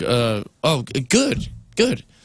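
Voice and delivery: very slow, drawn-out, caught-off-guard, taken-aback stammer. Retelling a coffee shop worker's surprised answer: imitating a taken-aback reply. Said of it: "taken aback".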